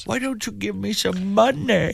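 very high, hushed, soft, creaky fake-sad voice. A host recalls a hilarious quote, in Adam Sandler's fake sad voice. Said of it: "that fake sad voice that Adam".

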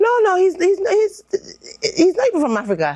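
quick, high, nervous blurt.

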